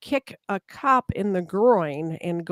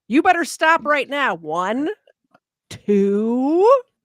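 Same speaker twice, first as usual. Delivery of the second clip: very slow, raised, high mock parental tone; 7 semitones higher, 5 dB louder than usual. Retelling how she counted at officers like children: imitating someone counting down at children. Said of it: "Was she counting like they're her children?".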